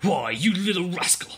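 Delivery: high-pitched, angry snarl. Narrating Dow as he tries to pry Ellen's arms loose, snarling. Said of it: "He snarled".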